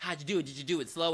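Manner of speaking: keen, eager, excited, boastful delivery. Retelling a movie scene where a man questions another: imitating excited bragging. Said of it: "he's very excited about what he's about to do".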